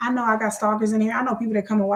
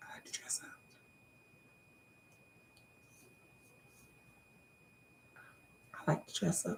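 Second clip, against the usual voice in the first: hushed, breathy, sultry fake-seductive whisper, trying too hard; 4 semitones lower, 23 dB quieter than usual. Joking about dressing up in costumes: mock sexy voice. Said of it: "That's me trying to be sexy".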